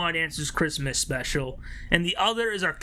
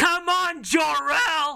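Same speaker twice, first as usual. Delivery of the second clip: put-on shrill, very high, loud yell; 10 semitones higher, 5 dB louder than usual. Speaker recalls a man yelling at the players; retelling a yell. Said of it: "then he yelled".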